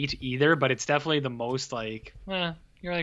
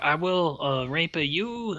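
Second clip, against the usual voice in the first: very slow, drawn-out put-on French accent; 3 semitones higher than usual. Imitating a spider character from a comic film: imitating a French accent. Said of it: "he's talking with a French accent".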